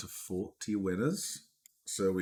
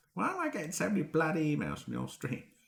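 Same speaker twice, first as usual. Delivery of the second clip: put-on Essex accent, pitched up; 8 semitones higher than usual. Imagining Cows's reaction to her email flooded from the stream: imitating Cows in an Essex accent. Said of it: "Except in an Essex accent".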